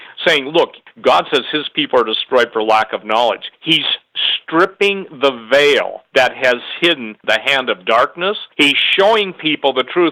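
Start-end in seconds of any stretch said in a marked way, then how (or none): none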